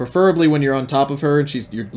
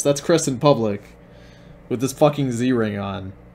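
normal talking voice

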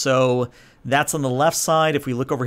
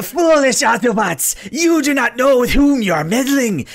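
put-on voice pushed very high and loud; 11 semitones higher, 5 dB louder than usual. Attempting a Transformers villain addressing the Autobots: Starscream voice. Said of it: "as I attempt to do my Starscream voice".

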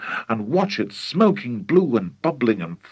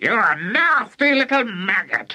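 put-on very high, scolding screech in an old woman voice; 9 semitones higher than usual. Reading a story aloud, voicing Grandma answering George, screeching. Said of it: "the voice screeched back".

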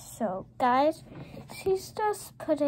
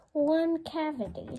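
ordinary talk, nothing marked

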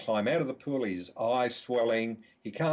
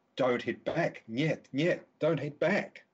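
play-acted urgent call, screaming, half-strength; 3 semitones higher than usual. Retelling a coach at the pool urging players: imitating someone screaming. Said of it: "at the pool screaming out".

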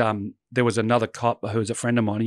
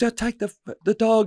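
mock very high scream, tripping on words; 11 semitones higher than usual. Retelling a friend screaming after a dog bit his leg: imitating someone screaming. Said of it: "And he's screaming".

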